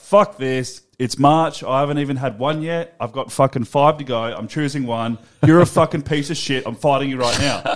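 ordinary talk, nothing marked

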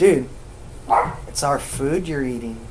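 ordinary delivery

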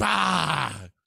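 shouting bah. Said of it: "he also shouted".

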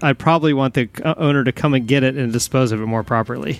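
ordinary talk, nothing marked

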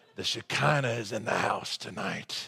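breathy, hushed, gravel-toned declaiming voice. Recalling a man from childhood speaking about the glory of God: imitating Brother Lowry's gravelly voice. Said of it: "it's hard to imitate this gravelly voice".

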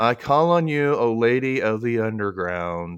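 plain

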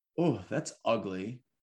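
plain

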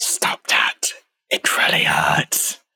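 creature voice hissing in a whisper. Game master voices a captured shapeshifter just punched by a player, hissing creature voice. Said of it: "It's a shapeshifter. / the rest of this demented creature changes into this long limbed blue humanoid, / I'm merely a tool. / and it hisses at you".

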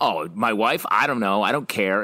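put-on coy, sarcastic tone. Imagining a character's alternative line, imitating a coy, sarcastic reply. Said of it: "sort of coy and sarcastic about it".

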